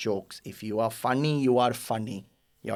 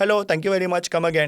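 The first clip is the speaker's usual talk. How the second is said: put-on Indian accent; 7 semitones higher, 5 dB louder than usual. A comedian retelling an early stand-up joke about Indian accents: stereotypical Indian accent. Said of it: "But actually, we go".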